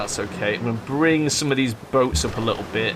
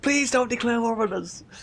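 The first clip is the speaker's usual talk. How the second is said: mock frantic, panicked pleading, very high; 12 semitones higher than usual. Playing a strategy game, the speaker imagines rival nations pleading, mock-panicked. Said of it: "They'll all be panicking".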